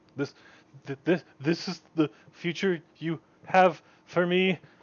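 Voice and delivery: hushed, soft half-whisper with halting, stumbling start. Acting out a scene by a coffin from a performance, retelling a half-whisper. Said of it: "And he whispers this".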